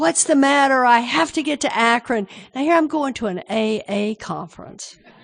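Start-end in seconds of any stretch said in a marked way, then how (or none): 0.0-2.3 frantic, loud, high, demanding outburst. Retelling her own outburst at a ticket agent: imitating her own ballistic fit. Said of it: "I'm having this ballistic fit".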